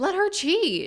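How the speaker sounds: emphatic, high, loud rallying cheer.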